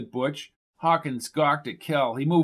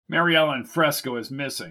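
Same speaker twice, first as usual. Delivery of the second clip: plain reading voice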